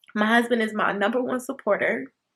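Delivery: tearful, choked-up, crying through the words. Giving a major shout-out to their husband while talking to the guys, crying. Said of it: "And I'm crying".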